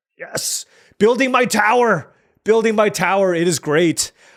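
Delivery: thrilled, worked up, full of excitement. A video host reacts as the strategy pays off, excited. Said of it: "I'm just excited right now".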